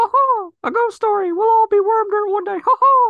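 very high, loud, squeaky cartoon voice. Imagining a cartoon character telling a ghost story: Mickey Mouse impression. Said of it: "any excuse to do your Mickey Mouse impression".

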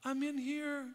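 tiny, very soft, hushed little voice. Retelling how she answered when called and not found, imitating her little voice. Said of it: "you would hear her little voice".

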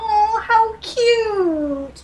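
slow, high-pitched cooing.

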